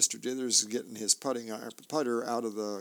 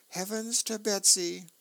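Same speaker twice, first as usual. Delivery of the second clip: ordinary delivery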